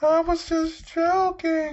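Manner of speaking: very high, weepy, drawn-out sobbing voice. Act out Alicia Fox answering Mark Carano after being found out, imitating someone crying. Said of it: "She starts crying like".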